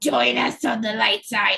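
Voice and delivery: sick, bedridden-sounding voice. Acting out a rebel spy recruiting someone: Palpatine in bed with the flu. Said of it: "Is that your Palpatine impression?".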